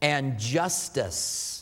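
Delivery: justice stressed, drawn out slow. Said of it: "I emphasize the word justice".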